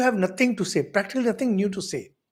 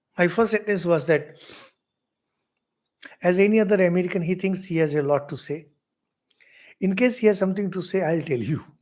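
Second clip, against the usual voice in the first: usual speaking voice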